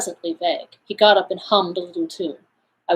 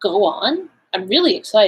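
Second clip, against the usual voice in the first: plain reading voice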